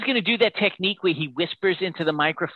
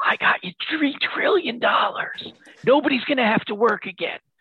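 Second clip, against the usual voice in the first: pitched-up whisper close to the mic; 6 semitones higher than usual. Predicting a speech, imitating Biden whispering into the microphone. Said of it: "he whispers to the audience, like".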